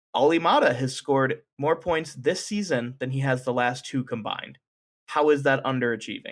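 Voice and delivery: ordinary talk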